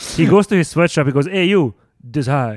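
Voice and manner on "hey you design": put-on Italian accent. Acting out a designer ordering a worker: put-on Italian accent. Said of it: "Why do you sound Italian?".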